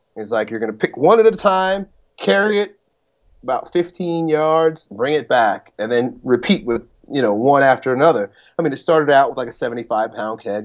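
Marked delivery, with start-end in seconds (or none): 0.5-8.3 put-on big Southern drawl accent. Retelling what a seminar coach told the group: imitating a southern accent. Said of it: "a big Southern accent".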